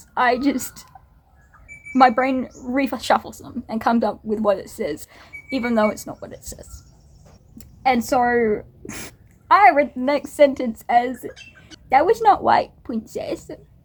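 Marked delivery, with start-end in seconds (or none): 11.9-13.5 patronizing, condescending, talking-down tone, pitched up. Reading a character's line aloud from a book, in a condescending tone. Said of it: "I said it in that voice".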